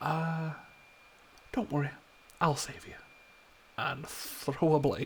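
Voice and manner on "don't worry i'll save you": quiet, soft, hushed half-whisper. Voicing a character who half-whispers to an ally mid-fight: half-whispering quietly. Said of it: "He's gonna just whisper quietly into his head".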